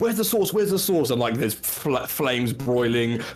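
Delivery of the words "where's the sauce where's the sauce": furious, very high, fast, angry yelling. Narrator voicing a dwarf pushing people around the kitchen, Gordon Ramsay-style shouting. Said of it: "big beefy dwarf is like pushing people around saying".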